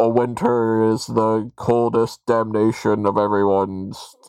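slow cartoon character voice, every word drawn out. Describing the animated series version of the character: animated Mister Freeze voice. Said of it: "he's got that voice where he's just like".

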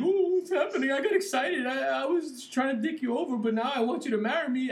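sobbing, weepy, high tearful crying voice. Recapping a wrestling heel segment, voicing the woman at a fake engagement: imitating someone crying. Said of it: "She's crying like".

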